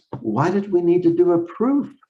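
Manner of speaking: high, puzzled tone.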